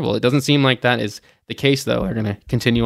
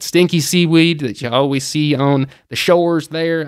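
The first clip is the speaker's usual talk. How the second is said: put-on folksy rural country accent; 3 semitones higher, 3 dB louder than usual. Speaker giving travel news, slipping into a country accent. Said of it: "I don't know why I went into a country accent on that".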